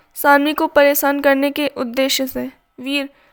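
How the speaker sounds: ordinary delivery, nothing marked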